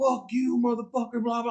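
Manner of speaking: high, loud mock yelling.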